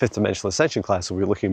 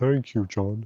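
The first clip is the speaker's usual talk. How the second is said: goofy, silly, funny talking-tree voice; 3 dB quieter than usual. Speaker shows how a tree thanking John would sound: funny talking-tree voice. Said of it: "Trees sound like this".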